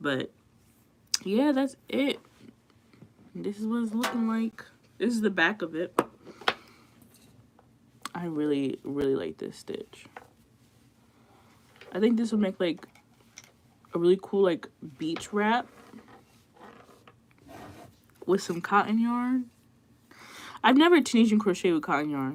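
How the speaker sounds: speech sounding a bit off. After getting a filling fixed, the speaker keeps talking with a numb mouth, talking a little weird. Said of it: "my mouth is still numb, so I'm kind of talking a little weird".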